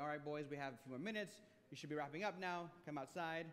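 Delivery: plain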